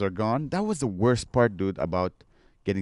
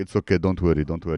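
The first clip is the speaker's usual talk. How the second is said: put-on old Eastern European doctor voice, lower; 5 semitones lower than usual. Retelling what the doctor said, imitating an old romanian or russian doctor. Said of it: "She's like an old Romanian or Russian doctor".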